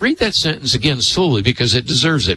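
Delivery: ordinary delivery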